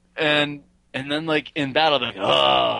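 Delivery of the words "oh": put-on gravelly voice, lower. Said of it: "he's more gravelly".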